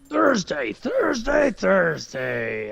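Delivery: monster truck announcer voice. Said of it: "this Thunder Down Under voice".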